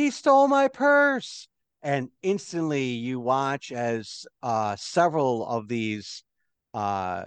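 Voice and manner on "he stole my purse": very high, loud yelling. Narrating a scene where a lady in the crowd cries out: lady yelling out. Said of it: "a lady yell out".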